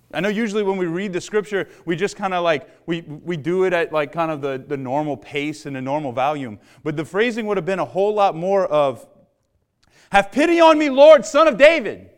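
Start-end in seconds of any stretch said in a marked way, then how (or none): 10.1-11.9 desperate, very loud, pitched-up screaming. Showing how a woman's plea in scripture would have sounded: imitating screaming out. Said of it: "She's screaming out to Jesus".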